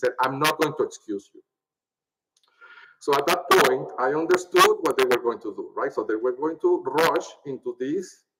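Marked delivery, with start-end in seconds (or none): 0.2-1.4 put-on angry tone. Retelling what the judge said when asked to be excused, imitating an angry judge. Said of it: "the judge said in a very angry tone".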